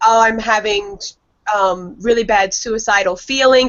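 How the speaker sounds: usual speaking voice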